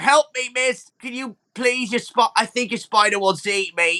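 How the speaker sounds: high, pleading, begging goblin voice. Voicing a goblin stuck in spider webbing, begging for help: goblin stuck in webbing begging. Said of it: "He's like".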